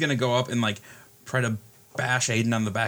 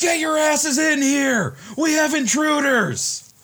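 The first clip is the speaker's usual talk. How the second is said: shrill, very high, loud, drawn-out yell; 6 dB louder than usual. Voicing a guard at the big doors who yells for help: guard yelling. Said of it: "goes to the big doors and yells".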